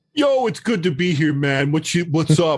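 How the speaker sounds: bad put-on New York accent. Greeting the hosts on arrival: bad New York beach accent. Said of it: "bad New York beach accent".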